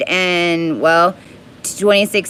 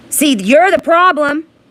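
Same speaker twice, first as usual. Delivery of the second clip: raging, angry yelling; 8 semitones higher than usual. Speaker confronting the people judging them, angry yelling. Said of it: "That's why I'm yelling at you".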